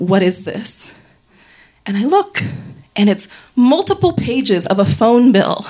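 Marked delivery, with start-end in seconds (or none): 0.0-0.9 calm, measured, even, commanding low tone. Retelling how he laid the papers beside him and spoke: retelling an even, commanding tone. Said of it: "in a very even, commanding tone".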